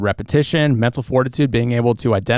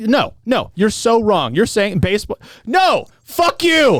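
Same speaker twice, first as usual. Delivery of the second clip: very high, deliberate, drawn-out angry outburst; 9 semitones higher than usual. Mocking the other person's reply in a debate, mock-angry. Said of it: "I'm so angry you just said".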